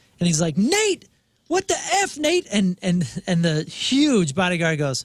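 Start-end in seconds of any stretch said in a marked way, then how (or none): 0.6-2.5 screaming at full pitch, very high, shrieking. Retelling a robbed man's outburst at his bodyguard: imitating someone screaming. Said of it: "a video of him screaming at his bodyguard".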